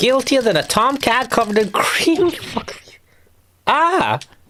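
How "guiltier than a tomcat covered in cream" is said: squeaky, very high-pitched put-on character voice. Playing a game and attempting a character's line, in a put-on character voice. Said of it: "I can't do this voice".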